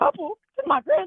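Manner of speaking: poor attempt at a bad old grandma voice. Answering someone who asks if they are a couple; bad grandma accent. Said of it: "You're not very good at the grandma accent".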